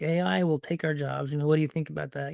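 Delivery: ordinary talk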